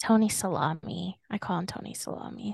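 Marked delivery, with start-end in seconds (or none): 1.3-2.5 half-whispered, much quieter. Telling the others the nickname they use for a man, slight whisper. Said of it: "You kind of whispered a little bit".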